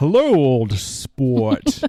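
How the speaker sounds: put-on mid-Atlantic accent. Mimic an actor putting on the voice in a movie, in a put-on mid-Atlantic accent. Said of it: "putting on the voice and being like".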